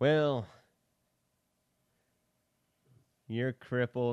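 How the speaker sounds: put-on classic Hollywood cowboy star voice. Quoting a film's ending line, doing a John Wayne impression.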